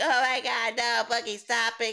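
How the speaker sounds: giggly voice, laughing throughout. Imagining how DSP would react to the clip: imitating DSP giggling. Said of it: "he'd probably be giggling".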